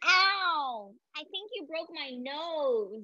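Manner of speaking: ow drawn out, all through the nose. Leading a group through character voices, nasal Dimitri voice. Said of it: "get really nasal in our voice".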